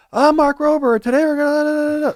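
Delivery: high-pitched, drawn-out host-style yell. Describing a former engineer who always talks at a yell, doing a Mark Rober impression, yelling. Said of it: "he just talks at a yell".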